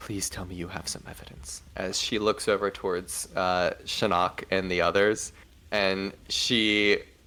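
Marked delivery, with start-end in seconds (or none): 0.0-1.6 very quiet, hushed whisper out the mouth's corner. Voicing a character who whispers an aside to a player: whispering out of the side of the mouth. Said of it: "whisper out of the side of her mouth".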